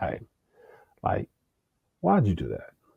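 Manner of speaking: tender, gentle, hushed, very soft voice. A parent shows how they speak to a disobedient son: retelling in a gentle voice. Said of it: "gentle voice".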